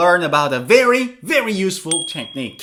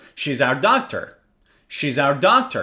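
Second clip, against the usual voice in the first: pitch dropping on doctor; 4 semitones lower than usual. Speaker demonstrates a statement for learners, with falling intonation. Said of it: "Falling intonation".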